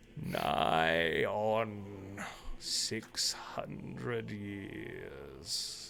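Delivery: deep, cracked, gravelly, broken voice, very slow. Voicing a swarm of crabs speaking Druidic: deep, gravelly, broken voice. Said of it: "this sort of deep, gravelly, broken sort of, of voice".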